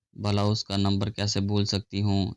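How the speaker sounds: ordinary delivery, nothing marked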